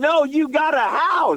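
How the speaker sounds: insistent excited exclamation.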